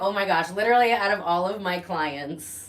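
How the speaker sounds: ordinary talk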